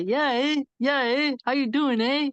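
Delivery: put-on friendly, polite Canadian accent, high and slow. Describing Canadians to a conversation partner, imitating a polite Canadian. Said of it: "Because they're very polite people. They say".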